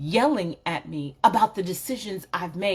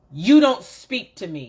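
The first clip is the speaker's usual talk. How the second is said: put-on loud, frustrated, commanding big-girl voice, raised tone; 6 dB louder than usual. Showing how frustration sounds when speaking to someone: frustrated, elevated tone. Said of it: "what frustration sounds like is".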